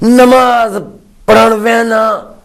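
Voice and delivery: heavy stress on every word: namaz, parhan, vahna hammered. Imitating someone's habit of speaking, with heavy stress on every word. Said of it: "वो इस तरह बोलते हैं".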